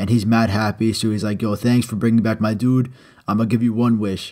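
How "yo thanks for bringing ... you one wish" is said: usual speaking voice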